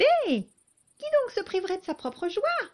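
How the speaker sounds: strident, piercing, shrill, loud grasshopper voice. Reading a tale aloud, the grasshopper answers the mother: shrill voice. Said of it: "d'une voix stridente".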